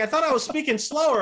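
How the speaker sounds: high, loud, surprised mock indignant outcry.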